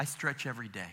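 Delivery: put-on, utterly flat deadpan with no inflection. Retelling the speaker's 78-year-old mom answering how she dances, retelling mom's deadpan reply. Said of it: "in the most deadpan voice".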